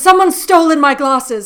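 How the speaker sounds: grand, loud, theatrical, dramatic dame delivery. Retelling a phone call from their actor mother, imitating dramatic dame-like mother. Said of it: "she's very much like a dame".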